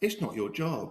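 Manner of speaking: gentle, very kind, sweet voice. Retelling how the general manager answered: imitating someone saying it kindly and sweetly. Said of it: "she said to me very kindly and very, um, sweetly".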